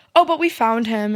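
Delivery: ordinary delivery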